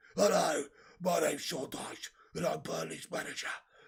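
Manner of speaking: sick-sounding, worn-out voice. Imagining how a football manager would sound with covid: Sean Dyche with covid voice. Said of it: "What's Sean Dyche gonna sound like if he got covid?".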